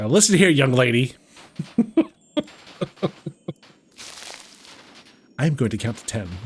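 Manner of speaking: firm, strict reprimanding tone. Playfully scolding like a mother: mom voice. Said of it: "Sometimes you gotta break out the mom voice".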